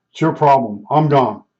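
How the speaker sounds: ordinary delivery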